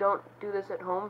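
usual speaking voice

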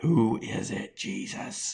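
very slow whisper from the corner of the mouth. Acting out a disciple's question at the table: speaking out of the side of the mouth. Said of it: "out of the side of his mouth".

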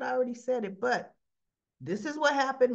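ordinary talk

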